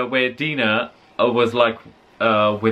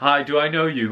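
normal talking voice

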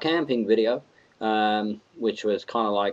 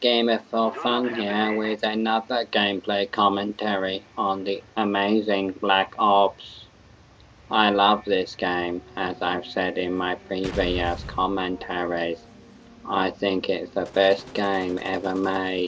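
put-on robotic voice. Opening a gameplay commentary video: put-on robot voice. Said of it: "I was just going into robot mode".

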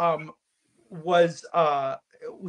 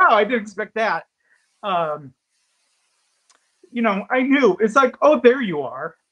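tearful, choked up, raised voice cracking with emotion; 4 semitones higher, 7 dB louder than usual. Telling how a relationship began, choked up with emotion. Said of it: "I'm gonna get choked up".

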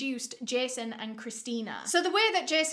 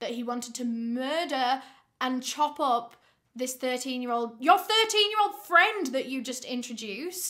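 heated, worked-up outburst. Reacting to a story about a threat to murder a 13-year-old, getting heated. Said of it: "Sorry, I'm getting heated".

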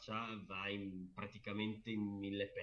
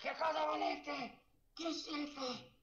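put-on very high-pitched old woman's scream; 3 dB louder than usual. Describing a game scene, the speaker demonstrates the cry with a scream. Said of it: "Un urlo così".

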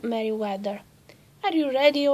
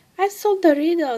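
bright, sunny, quick, raised announcing voice; 6 semitones higher, 6 dB louder than usual. A daughter hurries into her mother's sewing room; saying brightly. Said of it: "she said brightly".

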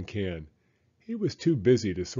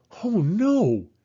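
loud, very high gasping exclamation; 10 semitones higher, 5 dB louder than usual. Narrating a story, voicing Walter as he sees the old street sign: gasped. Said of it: "gasped Walter".

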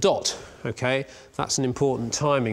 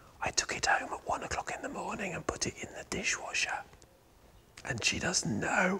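hushed voice, very quiet and higher; 6 semitones higher, 9 dB quieter than usual. Confiding a secret about the dishwasher while showing engine parts: said very quietly. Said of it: "I've got to say this very quietly".

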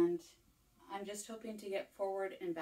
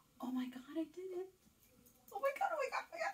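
very high, swooping, rushed excitement; 11 semitones higher than usual. Getting something to work for the first time, you exclaim, so excited. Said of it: "I'm so excited".

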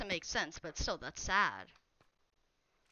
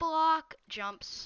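voice suddenly jumping higher and louder. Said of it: "my voice just changed pitch".

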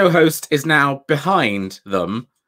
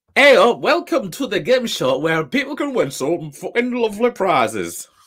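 put-on Hull accent blended with Dutch; 4 semitones higher than usual. Playing a game show host welcoming contestants, mixed Dutch and Hull accent. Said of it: "It's a mix of Dutch and Hull".

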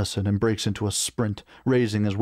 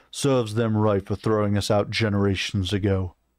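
usual speaking voice

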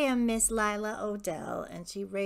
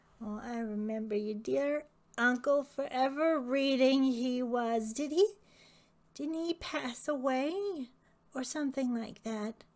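put-on very old lady voice, higher; 3 semitones higher than usual. Old lady chatting with a returning visitor, very old lady voice. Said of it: "And she's a very old lady".

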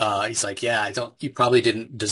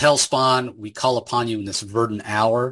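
ordinary talk

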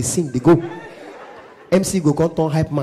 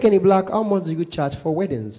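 plain

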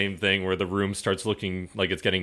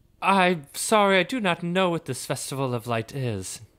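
squeaky mouse voice, higher; 10 semitones higher than usual. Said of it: "he starts squeaking at you".

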